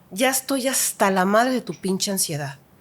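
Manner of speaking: normal talking voice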